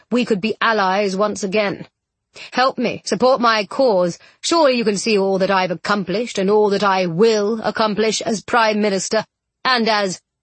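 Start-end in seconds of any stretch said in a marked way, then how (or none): none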